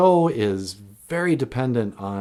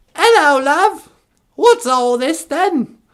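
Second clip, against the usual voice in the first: shrill, very high, very loud belted crier voice; 10 dB louder than usual. Acting out a radio call-in where the Queen of England phones: Queen of England voice. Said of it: "the caller might be, you know, like, the Queen of England".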